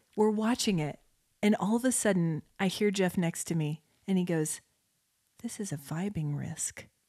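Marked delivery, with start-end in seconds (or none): 5.5-6.9 low, soft mutter under the breath, half to oneself. Retelling a remark made while watching a show together: imitating Jeff muttering under breath. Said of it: "Under his breath".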